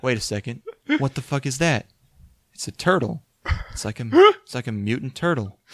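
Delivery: woozy, drugged, rambling nonsense babble. Retelling a boyfriend's voicemail left while on Ambien: imitating a guy on Ambien. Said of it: "he's saying a bunch of nonsense".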